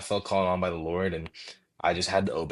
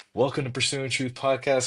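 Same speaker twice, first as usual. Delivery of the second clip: trembling, shaky, nervous delivery; 6 semitones higher than usual. Recalling starting a podcast with borrowed church equipment, imitating own shaky voice. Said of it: "shaky voice and all".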